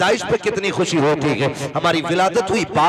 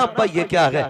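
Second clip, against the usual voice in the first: normal talking voice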